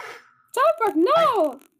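high, loud shout in alarm.

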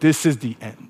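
contemptuous, scoffing delivery. Retelling a film scene, quoting the Demon King: imitating a scoffing Demon King.

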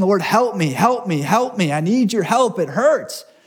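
acted desperate pleading cry. Retelling begging God for help in hard times: reenacting crying out to God. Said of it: "I'm begging the Lord. I'm crying out".

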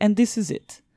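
put-on English spoken with a Ukrainian accent. Telling a story about an acquaintance, imitating how she spoke and how she ended her sentences, in a Ukrainian accent. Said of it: "And she talked like this".

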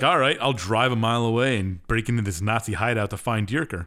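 ordinary delivery

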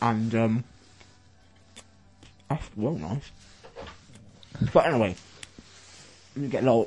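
muffled speech with mouth full, eating. Telling a story while eating a donut, talking with mouth full. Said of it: "let me just swallow this bit".

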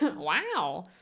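wow drawn out slowly in a drawl. Telling two actors apart by their catchphrases: Owen Wilson 'wow'. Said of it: "Owen Wilson is the wow".

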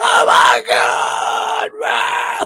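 put-on freaked-out panic, very slowly stretched out. Retelling how a house full of people reacted when the power went off: retelling people freaking out. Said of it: "They freak the fuck out".

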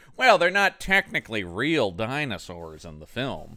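argumentative, defensive tone. Discussing the film's dinosaurs, the speaker imitates the writers: imitating a screenwriter arguing. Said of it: "that was my impression of a screenwriter arguing".

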